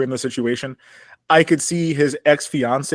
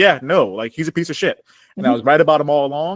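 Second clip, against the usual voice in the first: ordinary talk, nothing marked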